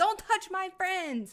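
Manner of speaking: very high-pitched, loud yell. Voicing a character attacking another to protect friends: yelling in character. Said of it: "and yell".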